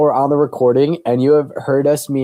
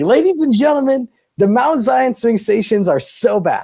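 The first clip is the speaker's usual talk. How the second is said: high-pitched, raised, hollering yell; 9 semitones higher than usual. Recounting watching the teardown live in front of mom and her friend: retelling own yelling. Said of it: "and I'm yelling stuff".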